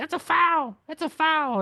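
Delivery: very high, whiny, complaining tone. Describing a player complaining on tv, imitating his whiny complaint. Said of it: "He whines a lot".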